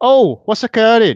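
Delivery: bad, terrible put-on Welsh accent, very high-pitched. Speaker tells Chris he'll do a Welsh impression: terrible put-on Welsh accent. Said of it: "That's my terrible Welsh accent".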